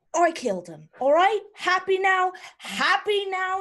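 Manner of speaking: very high, rising, furious angry yell. Voicing Anna in a tavern scene after she stabs a knife into the table, yelling. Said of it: "she's like yelling it into the tavern".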